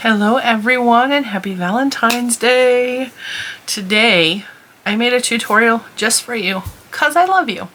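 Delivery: cheery, happy, excited tone. Greeting viewers at the start of a Valentine's Day tutorial, in a cheery voice. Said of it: "you hear my cheery voice?".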